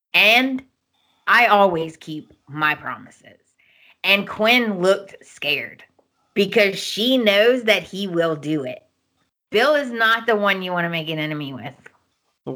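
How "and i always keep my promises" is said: ordinary talk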